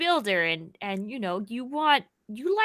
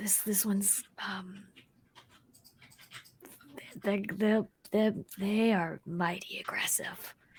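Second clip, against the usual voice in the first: very quiet, slow, halting hushed whisper; 3 semitones lower, 12 dB quieter than usual. Whispering a warning to Alala about the aggressive creature: whispering in character. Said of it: "whisper to Alala".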